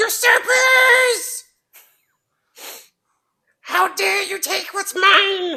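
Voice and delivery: shrill character voice. Game master voicing a figure calling down from a tree, shrill voice. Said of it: "you hear a shrill voice come down from the tree".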